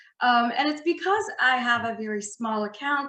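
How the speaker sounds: ordinary talk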